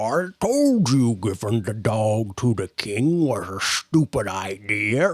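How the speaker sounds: low, gurgling monster creature voice. Narrating a scene, voicing an approaching Bullywug warrior, in a gurgling Bullywug warrior voice. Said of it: "some Bullywug warriors are approaching".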